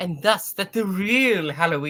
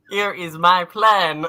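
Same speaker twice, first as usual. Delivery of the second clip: raised, machine-like voice, like a talking machine; 2 semitones higher, 6 dB louder than usual. Reading a villain's lines aloud to the group: Stephen Hawking-like voice. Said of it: "I'm doing a Stephen Hawking-like voice".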